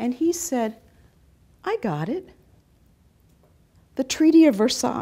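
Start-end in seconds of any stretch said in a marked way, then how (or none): 1.6-5.0 very loud, swooping, thinking-aloud musing voice. Retelling an officer's remark in a talk: imitating a musing voice. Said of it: "in a very kind of musing voice".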